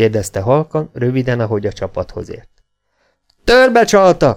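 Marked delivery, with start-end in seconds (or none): 3.4-4.4 high, excited shout. A man answers a rider who has just galloped up, shouting excitedly. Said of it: "kiáltotta izgatottan Gunnar".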